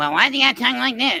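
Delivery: put-on high-pitched cartoon character voice. Retelling joking about a cartoon show: Cartman voice. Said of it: "use that voice".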